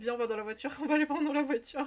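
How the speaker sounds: loud, urgent voice, spoken through a laugh.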